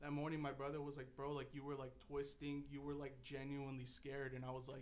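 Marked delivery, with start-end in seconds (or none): none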